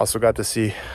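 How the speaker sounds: panting and winded mid-sentence. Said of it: "sorry, I'm out of breath".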